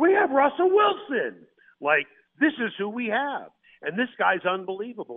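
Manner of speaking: high, swooping, thrilled, excited yell. Retelling what a man yelled out at a press conference, retelling a yell. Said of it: "and he yelled out".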